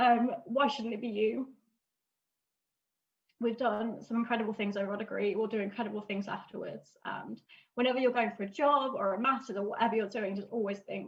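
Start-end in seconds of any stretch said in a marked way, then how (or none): 0.5-7.0 tearful, choked up, fighting back tears. Giving a farewell speech and quoting a parent's saying: tearful, fighting back tears. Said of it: "I don't wanna stop crying, sorry".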